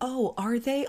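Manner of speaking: high, slow, condescending voice.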